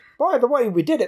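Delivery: put-on Australian accent, pitched a little high. Explain why the phrase sounded like something a certain Australian would say, doing a Jim Jefferies impression. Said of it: "something Jim Jefferies would say".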